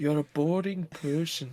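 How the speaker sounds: bad put-on Irish accent, very slowly drawn out. Acting out a scene between two friends in an awful Irish accent. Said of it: "That's an awful accent".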